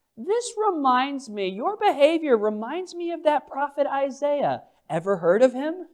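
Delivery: soft, mild, wry, gently sarcastic tone. Voicing Paul rebuking those who rejected the message: voicing Paul with gentle sarcasm. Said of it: "with a bit of gentle sarcasm".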